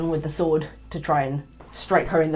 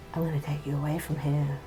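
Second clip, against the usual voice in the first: hushed, soft half-whisper, close in; 5 dB quieter than usual. Voicing a character who holds you grappled and half-whispers in your ear. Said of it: "she whispers in your ear".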